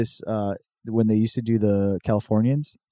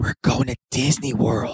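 acted whispering. Retelling a comedy sketch, the dad waking his kids: imitating a whispering dad. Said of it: ""Why are you whispering?"".

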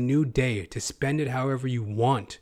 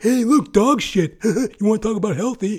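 exaggerated, hammed-up, loud and high delivery; 8 semitones higher, 7 dB louder than usual. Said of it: "I'm hamming it up".

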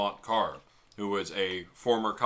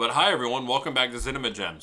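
speaking with food in mouth; 4 semitones higher, 5 dB louder than usual. Opening the podcast episode to listeners, speaking with mouth full. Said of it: "Potato in my mouth".

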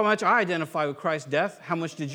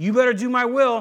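mock threatening father voice, higher and louder; 5 semitones higher, 7 dB louder than usual. Acting out God pictured as a really bad dad: imitating a menacing bad dad. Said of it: "like he's like this really bad dad".

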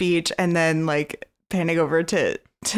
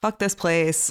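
normal talking voice

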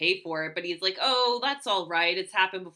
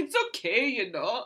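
poor fake Jamaican accent; 4 semitones higher, 3 dB quieter than usual. Retelling how a man sounded, quoting him in a bad Jamaican accent. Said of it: "that was a good Jamaican accent".

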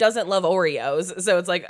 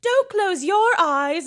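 very high, spotty put-on British accent; 13 semitones higher, 3 dB louder than usual. Quoting a movie scene where she is being British: imitating Lindsay Lohan's British accent. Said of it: "being British".

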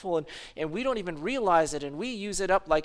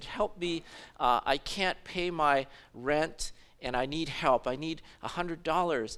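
weak, frail, slow pleading voice; 3 semitones lower, 3 dB quieter than usual. Retelling a caller asking for rent money: imitating a frail voice. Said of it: "he had a very frail voice".

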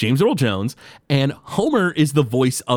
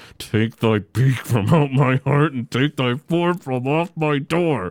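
venomous, furious cartoon voice. Praising Homer's angry voice while quoting his lines from The Raven, mock-venomous Homer impression. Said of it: "you can feel the venom in his voice".

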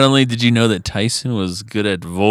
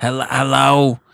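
put-on New Jersey smoker's voice, much higher pitched; 4 semitones higher than usual. Recalling a woman she called in collections, doing her greeting: imitating Betty's hello. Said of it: "And she was from New Jersey".

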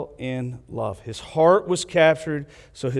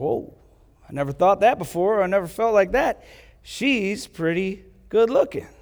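put-on pitched-up young teen boy voice, about seventh grade; 6 semitones higher than usual. Retelling Tommy noticing a girl in class: imitating a seventh-grade boy. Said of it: "He's like".

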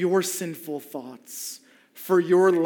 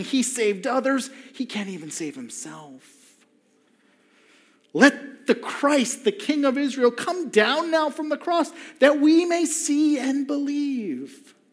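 sneering, mocking, dripping sarcasm with raised pitch; 8 semitones higher than usual. Speaker acting out the crowd mocking Jesus at the cross, dripping with sarcasm. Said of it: "Just dripping with sarcasm".

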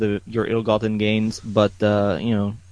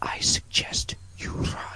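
soft, breathy whisper, barely above a breath. A character leans in to take the keys, whispering. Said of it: "I will whisper".

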